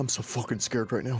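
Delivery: muttered quietly under breath. Voicing a character hiding in a bush, muttered under his breath. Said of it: "under his breath".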